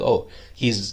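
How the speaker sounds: ordinary talk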